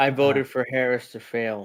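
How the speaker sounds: plain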